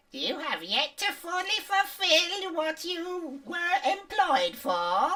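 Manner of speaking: cackling character voice. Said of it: "the cackling voice is like".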